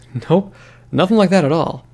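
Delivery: anxious, guilt-laden tone. Narrator reads a character's excuse after returning to her, nervous and guilty. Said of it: "with as much nervous guilt in my voice as I could muster".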